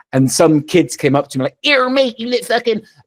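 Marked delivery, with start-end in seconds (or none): 1.6-2.8 put-on thick Bristol accent, very high pitch. Retelling what kids said while about to bully him: strong Bristolian accent. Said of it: "there's a very strong Bristolian accent there".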